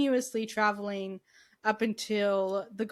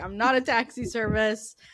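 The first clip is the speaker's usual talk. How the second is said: put-on angry voice; 3 dB louder than usual. Retelling a scene where the Doctor gets annoyed: imitating the Doctor getting mad. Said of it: "And he gets so mad".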